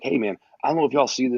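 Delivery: high, light hype-man shout. Retelling hyping up a quiet gym crowd without a mic: imitating own yell. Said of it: "I'm yelling this in the plot".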